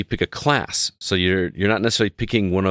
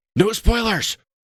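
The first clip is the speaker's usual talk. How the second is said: mock, very high-pitched, shrill scolding yell; 14 semitones higher than usual. Speaker recalls his gaming buddy's mom yelling in the background: imitating a mom yelling. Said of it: "Like yelling at him".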